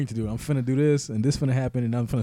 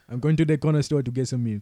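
English with a Haitian accent. Asked to give some Haitian accent English, say the line in a Haitian Creole accent. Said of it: "give me some Haitian accent English".

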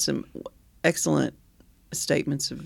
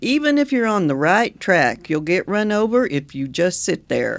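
put-on Oklahoma accent, louder; 3 semitones higher, 6 dB louder than usual. Quoting Will Rogers on his birthday: Will Rogers voice. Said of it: "how I went into my Will Rogers voice".

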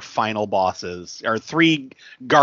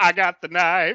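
high-pitched, very slow, stretched-out menacing delivery; 8 semitones higher than usual. Imagining Eddie Murphy as a fighter stabbing someone: Eddie Murphy impression. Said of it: "He'd be like".

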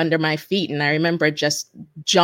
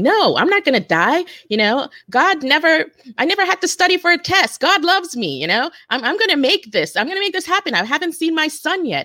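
mock very high, animated, swooping yelling; 12 semitones higher than usual. Recalling a disaster as people yelled they would die, retelling own yelling. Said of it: "I started yelling".

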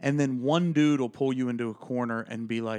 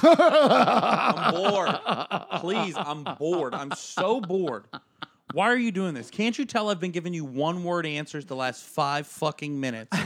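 mock drunk, high, bored voice; 5 semitones higher, 4 dB louder than usual. Retelling a drunk complaint to a stranger at a bar: imitating own drunk self. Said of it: "I've been drunk talking to a stranger".

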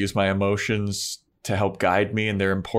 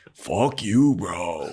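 put-on laid-back California surfer dude accent. Riffing on a character's accent in a scene with Buffy: California surfer dude accent. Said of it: "just California surfer dude".

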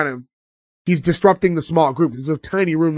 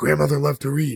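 secretive, hushed stage whisper; 3 dB quieter than usual. Retelling a scene where the grandfather half-whispers a line: imitating a half-whisper. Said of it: "the grandfather's whispering".

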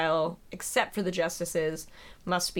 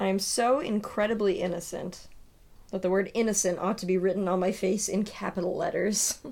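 ordinary delivery

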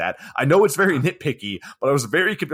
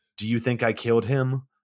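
fast, flat monotone with no inflection; 3 semitones lower than usual. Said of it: "Just like that same tone and speed and inflection".

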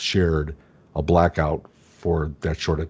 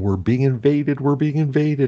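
put-on tearful, hysterical, high sobbing cry; 9 semitones higher than usual. Telling how a sister came home late at night, imitating hysterical crying. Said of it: "she's crying. She's hysterical".

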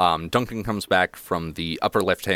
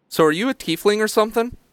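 put-on very high, fast kid voice. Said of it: "he looks at you and goes".

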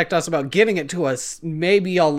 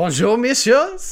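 put-on French accent, best attempt, pitched higher; 6 semitones higher, 3 dB louder than usual. Asked on stream to do a voice, trying a put-on french accent. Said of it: "my best French accent".

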